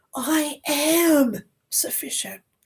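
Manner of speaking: heavy stress placed on the word am. Repeating a self-affirmation, stress on am. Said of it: "you put the emphasis on the am".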